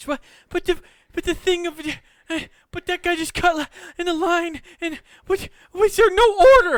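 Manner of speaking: horrified breakdown babble. Mocking the other's impression: imitating someone having a breakdown. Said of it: "somebody who was having a mental breakdown".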